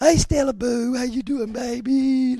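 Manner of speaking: put-on very high, silly baby talk, baby drawn out. Showing how grown adults talk to their pets, greeting the dogs: talking stupid to dogs. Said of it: "It makes us grown adults talk stupid. I do that with my dogs".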